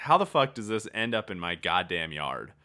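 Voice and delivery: ordinary talk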